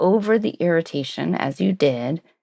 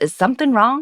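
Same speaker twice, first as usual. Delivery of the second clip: snide put-on snark, pitched up; 7 semitones higher than usual. Showing how a question to a colleague sounds with a put-on snarky tone. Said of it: "the snarky tone".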